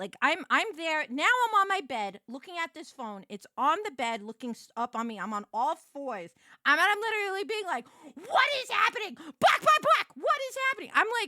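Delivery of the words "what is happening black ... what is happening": put-on very high, loud, wild, unhinged feral freakout. Retelling own reaction on the bed at three in the morning: imitating own feral freakout. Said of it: "going full feral".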